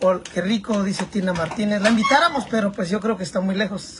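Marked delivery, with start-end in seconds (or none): none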